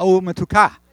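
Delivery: stress on final syllable ka. Teaching a Hebrew greeting, Umetuka with stress on last syllable ka. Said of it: "last syllable".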